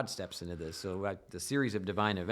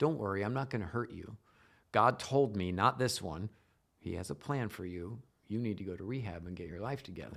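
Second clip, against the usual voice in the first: very strange, oddly clear voice. Retelling what a robber with a gun said: imitating a strange, clear voice. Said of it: "in this very strange and clear voice".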